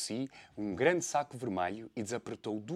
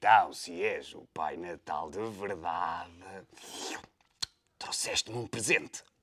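low, drooling, slobbering wolf voice, tongue hanging out; 6 semitones lower than usual. The wolf asks the supposed Santa Claus for a present, drooling with tongue out. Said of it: "com a língua de fora a salivar".

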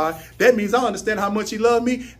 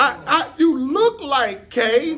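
high, slow amazement. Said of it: "People come up talk to you".

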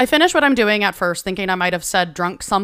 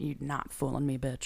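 mock very quiet, low, dead-level deadpan; 5 semitones lower, 15 dB quieter than usual. Retelling how a friend reacted to a joke: imitating Leighton's deadpan reply. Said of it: "looked at me deadpan".

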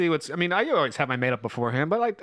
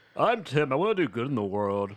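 teasing, poking-fun, mocking tone; 3 semitones lower than usual. Making fun of a friend who is off saving lives: mocking impression of Tim. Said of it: "so can we make fun of that?".

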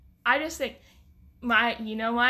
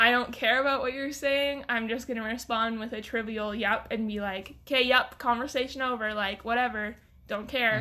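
ordinary talk

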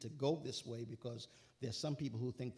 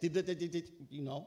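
mock, rushed, fast rattled-off gibberish. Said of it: "you gotta say it real fast".

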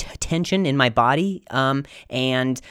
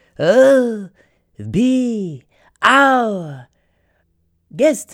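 loud, very slow, put-on French accent; 8 semitones higher, 5 dB louder than usual. Showing how the speaker sounded at the time, quoting a line in a french accent. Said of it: "I had a French accent".

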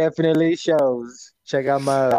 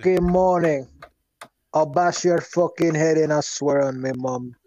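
put-on Irish accent. Greeting the others at four in the morning: put-on Irish-sounding accent. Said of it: "are you trying to be Irish".

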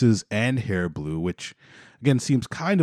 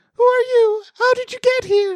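put-on acted-out terrified child's cry, very high and loud; 6 dB louder than usual. Retelling the story, the speaker acts out Noah when his sister jumps into his room, terrified. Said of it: "He's really scared".

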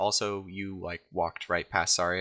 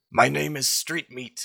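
high, loud hollered goblin-voice yell; 8 semitones higher, 5 dB louder than usual. Voicing a goblin yelling back over his shoulder: yelling in character. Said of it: "yells back in Low Goblin".

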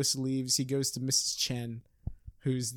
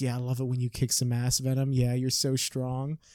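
mock, put-on dirty-talk voice. Retelling a scene where a woman talks to Venom, mock dirty talk. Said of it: "she just starts dirty talking Venom".

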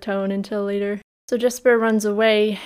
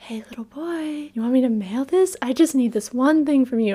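unsettling, creepy character voice; 4 semitones higher than usual. Retelling a scene where Jesper asks a little boy to mail something: imitating a creepy character voice. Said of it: "he's being so creepy".

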